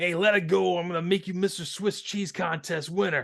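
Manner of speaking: heavy put-on New York accent. Quoting a line the speaker felt didn't land, in Bully Earth's New York accent. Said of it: "In his New York accent".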